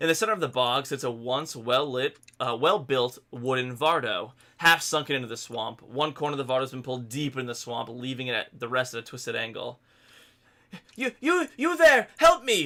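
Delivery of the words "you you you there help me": frantic panicked cry, higher and louder. Voicing a trapped character calling out from a stuck wagon: frantic calling for help. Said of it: "a frantic voice calls from within".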